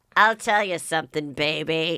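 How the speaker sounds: put-on voice dropped way down low. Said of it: "a voice that was much, like, deeper".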